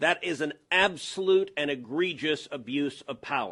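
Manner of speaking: ordinary delivery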